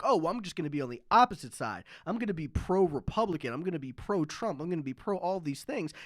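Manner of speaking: plain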